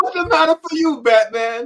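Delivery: very high-pitched put-on Italian accent. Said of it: "Italian Batman".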